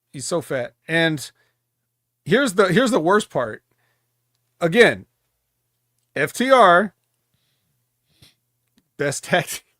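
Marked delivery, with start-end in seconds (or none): 4.6-9.6 laughing throughout, words drawn out. Calling a tag team the best tag team, laughing while talking. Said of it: "I can't even say it without laughing".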